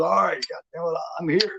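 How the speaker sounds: mock wild, frantic, high maniac screaming. Telling how a late man burst in screaming at someone; retelling a maniac scream. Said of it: "like a maniac and screams at him".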